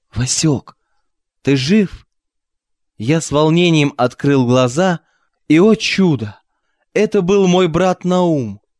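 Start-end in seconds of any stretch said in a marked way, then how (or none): 0.2-2.1 astonished, incredulous, wondering tone. The visitor, palm on the bedridden narrator's forehead, speaks almost half-whispering, surprised. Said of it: "почти шепотом удивленно произнес".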